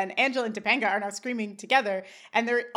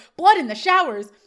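loud, high-pitched, excited outburst. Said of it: "Sean's like".

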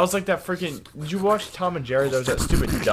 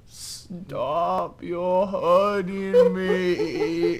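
acted cartoon hunter character voice; 3 semitones higher than usual. Comparing which impression they do best, a speaker does this one: Elmer Fudd voice. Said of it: "What impression we can do the best?".

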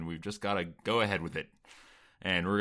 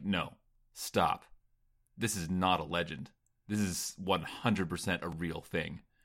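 put-on dead serious tone, slower; 2 semitones lower, 3 dB quieter than usual. Retelling a scene and quoting Bodhi, imitating Bodhi dead serious. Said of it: "He's so serious. He's like".

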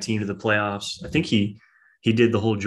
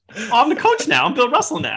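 sassy put-on voice, higher and louder; 6 dB louder than usual. Retelling how Cat answered Draymond: sassy Cat impression. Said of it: "Cat's voice makes me cringe".

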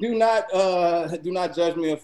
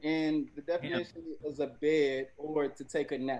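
ordinary talk, nothing marked

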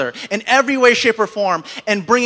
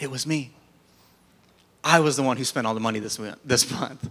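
meek, humble, subdued, head-down tone; 10 semitones lower, 8 dB quieter than usual. Retelling his wife admitting she spent the money: imitating a humbled wife. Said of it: "very humbled".

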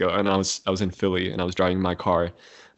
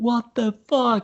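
put-on, very high, full-lunged shrieking scream; 4 dB louder than usual. Retelling screaming alone in the car after a bad few months: retelling a scream. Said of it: "I just screamed, like, at the top of my lung".

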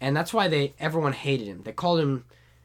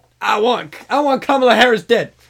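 shouted put-on voice, much louder and higher; 9 semitones higher, 12 dB louder than usual. Arguing with the others over how he talks, shouting Joe Biden impression. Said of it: "How Joe Biden talks. He shouts".

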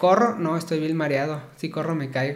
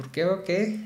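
ordinary talk, nothing marked

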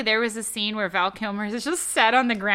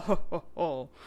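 whispered, breathy, sinister jolly ho-ho-ho laugh; 6 semitones lower, 6 dB quieter than usual. Imitating an actor's line in a movie: Marlon Brando as evil Santa. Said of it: "Evil Santa".

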